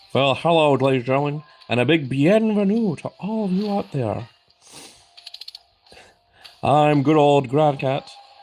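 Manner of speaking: bad, put-on wrestling ringside announcer voice. Pretending to call matches as a wrestling commentator: Jim Ross impression. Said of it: "Doing my best Jim Ross impression?".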